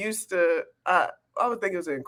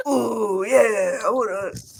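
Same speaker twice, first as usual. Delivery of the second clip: very slow, drawn-out mocking voice, every word stretched; 2 semitones higher than usual. Repeating the other speaker's impression back: imitating a Macho Man impression. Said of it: "What was that impression?".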